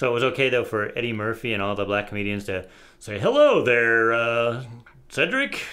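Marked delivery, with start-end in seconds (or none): 3.2-5.6 sing-song put-on voice, drawn-out "there".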